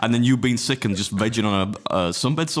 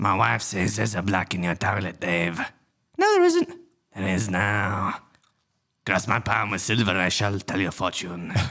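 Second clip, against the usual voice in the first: put-on sinister character voice, lower; 4 semitones lower than usual. Doing a Papa Lazarus impression for the others: Papa Lazarus voice. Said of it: "this is a really good impression".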